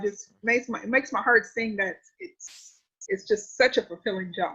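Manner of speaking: emotional, soft, tearful voice, right on edge of tears. Speaking about how teaching changed their life, on the verge of tears. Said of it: "I'm about to cry now".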